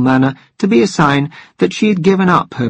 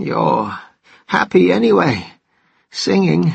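broken, rough, cracked, creaky voice; 3 semitones higher than usual. Reading a story aloud, voicing a man speaking in a cracked voice. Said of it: "said the man in a cracked voice".

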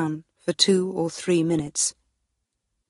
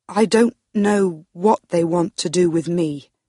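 usual speaking voice

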